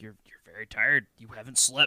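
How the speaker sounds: mock menacing tone, imitated. Retelling a movie scene, imitating the dad's menacing tone. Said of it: "her dad just gets all menacing".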